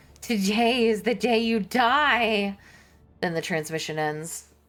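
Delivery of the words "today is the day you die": very slow, taunting, mocking, inhuman drawl. A voice over the boxcaster addresses the bridge officers; mocking inhuman giggling voice. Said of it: "A mocking, inhuman voice giggles hysterically".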